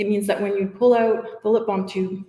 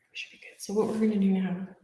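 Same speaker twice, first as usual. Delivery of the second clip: soft, hushed, low-key half-whisper; 6 dB quieter than usual. Explaining the next step of pouring the second tray, half-whispering. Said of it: "I don't know why I'm whispering".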